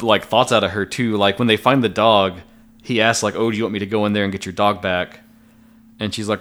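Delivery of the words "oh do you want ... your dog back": normal talking voice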